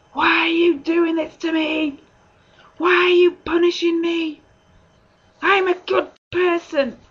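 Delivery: play-acted furious yelling, high and loud. Speaker re-enacts raging at god, blaming him for everything: retelling shouting at god. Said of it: "I was shouting at him".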